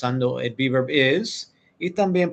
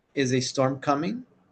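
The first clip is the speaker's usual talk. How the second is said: rising intonation, pitch going up at end; 4 dB quieter than usual. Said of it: "you also end with that tone".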